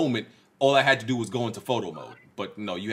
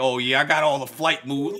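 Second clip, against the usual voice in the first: put-on New York street accent, pigeon voice; 4 semitones higher, 3 dB louder than usual. Teasing the other speaker, he mimics him talking like a New York pigeon. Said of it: "You talking like you a real like New York pigeon".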